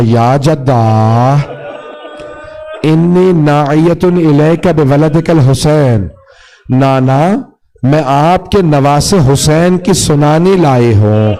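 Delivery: ordinary talk, nothing marked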